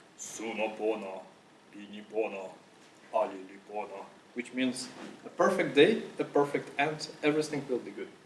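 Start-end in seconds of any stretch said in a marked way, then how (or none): 0.2-4.1 low, growling, monstrous voice. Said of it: "in a, like, really, monster-like voice".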